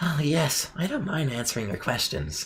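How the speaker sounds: soft, high, all-out nerdy character voice. Voicing a character, offering the group a full nerd voice: full nerd voice. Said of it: "Do you guys want me to go full nerd for him?".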